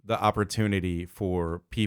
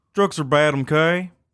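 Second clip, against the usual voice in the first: overdone hillbilly cartoon impression, slower; 8 semitones higher, 8 dB louder than usual. Asked how you feel about your impression, try it out in a too-hillbilly Mr. Mackey impression. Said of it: "That sounded way too hillbilly".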